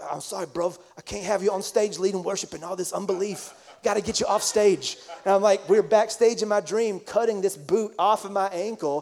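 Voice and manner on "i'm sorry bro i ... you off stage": put-on upper-crust English accent. Retelling what a friend said in the speaker's dream, in Ashley's posh British accent. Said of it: "in his posh British accent".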